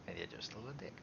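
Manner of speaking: very quiet, low mutter under the breath. Speaking in character to another character, muttered under breath. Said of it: "like under his breath".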